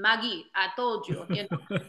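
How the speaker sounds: put-on Russian accent. Retelling what her Latvian coach told her, in a Russian accent. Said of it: "like Russian voice".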